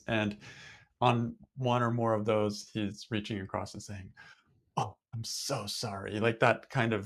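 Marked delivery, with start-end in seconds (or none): 4.8-6.2 imitated apologetic tone, quieter, slower. Speaker acts out a man reaching across to apologize, imitating his sorry. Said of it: "I can't even imitate it very well".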